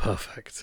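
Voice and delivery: put-on muttered aside. Retelling what a pathologist said to himself: imitating someone muttering under his breath. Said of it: "to himself under his breath".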